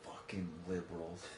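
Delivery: low, soft muttering under the breath.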